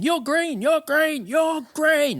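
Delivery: shrill, insistent, very high, loud, repeated yelling. Retelling a friend's mum yelling at an aid station: imitating Jo Kane yelling loudly.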